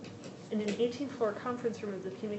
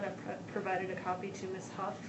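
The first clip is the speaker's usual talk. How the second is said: ordinary delivery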